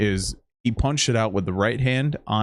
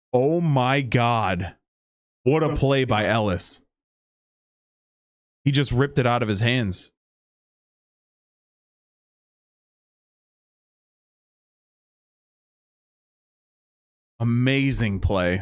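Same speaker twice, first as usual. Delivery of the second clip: thrilled, excited, high-pitched sportscaster voice. Calling a play as Ellis strips the ball from Irving: voice going high with excitement. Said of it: "Sorry my voice went so high on that".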